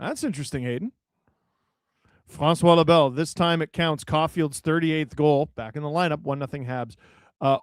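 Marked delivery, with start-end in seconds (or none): none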